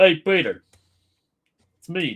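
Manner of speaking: belted, loud, failed put-on Dutch accent. Chatting with friends, greeting a friend as Joe Swanson: bad Joe Swanson impression. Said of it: "Are you trying to do a Dutch accent".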